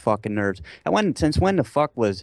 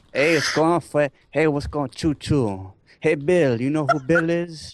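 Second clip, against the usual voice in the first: put-on, high mishmash of four accents including Italian, Spanish; 6 semitones higher than usual. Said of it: "try to mix four accents into one thing".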